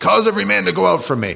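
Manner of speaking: sudden, high, loud yell.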